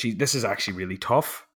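plain

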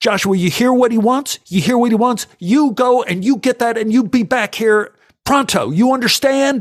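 very high, loud yelling. Retelling how a man ordered a little boy around, imitating a man yelling. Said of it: "And he yells at this little boy".

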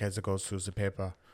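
put-on hint of a German accent. Quoting someone's line back to them, slight German accent. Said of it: "You kind of spoke in a German accent there".

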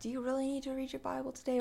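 soft, hushed, tempting half-whisper. Retelling how the devil tempts: imitating the devil half-whispering. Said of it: "he's whispering".

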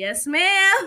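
put-on, loud, high Texas accent. Quoting his reply when asked if he's from Texas, Texas accent. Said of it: "With like a Texas accent".

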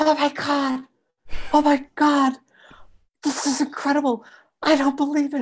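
put-on shrill, very high, thrilled shrieking. Tell how a student reacted under the telescope's finder scope, imitating a student screaming. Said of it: "the student starts screaming".

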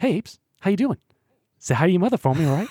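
very high, squeaky hero voice pitched way up. Doing an impression of Mark Wahlberg in Planet of the Apes: Mark Wahlberg impression. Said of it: "here's my, um, impression of Mark Wahlberg in Planet of the Apes".

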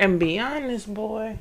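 put-on elderly grandmother voice. Pressing someone about a woman's marriage, in an old grandma voice. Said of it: "You sound like a grandma".

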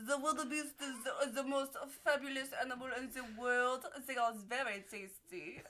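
bad, fake French accent. Taking a turn in an accent round, bad French accent. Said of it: "tell me about the French wildebeest".

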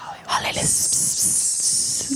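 hushed whisper. Showing how the phrase must be said: whispering. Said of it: "You have to whisper it".

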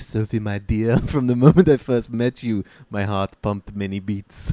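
bad, cringeworthy, embarrassing put-on French accent. Retelling how a man on a date spoke to Sophie: embarrassing French accent. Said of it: "does this embarrassing French accent for her".

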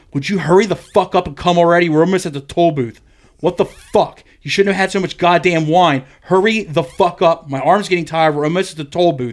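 play-acted irate scolding harangue, high-pitched and angry. Retelling how she yelled at him to hurry up before the toll booth, imitating her angry yelling. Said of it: "starts getting angry with me, like yelling at me".

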